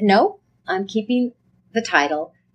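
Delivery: normal talking voice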